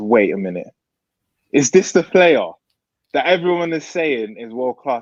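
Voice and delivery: normal talking voice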